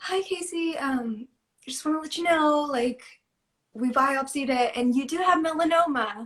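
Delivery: mock very cheerful voice. Retelling a voicemail that delivered bad news: imitating a cheerful voicemail. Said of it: "she said it in like a really cheerful way".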